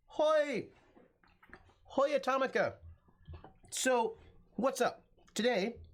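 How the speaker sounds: slow, high-pitched speech while chewing, mouth full. Greeting the audience after rushing back from work, talking while chewing. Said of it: "I'm so sorry that I'm chewing".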